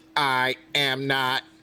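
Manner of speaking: acted robotic voice. Joking about sounding like Jaeger: imitating Jaeger's voice. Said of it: "I sound just like Jaeger".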